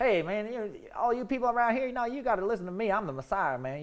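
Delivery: thick put-on Southern drawl. Imagining a lowly man announcing himself as the Messiah: thick Southern accent. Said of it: "some guy comes in with a thick Southern accent".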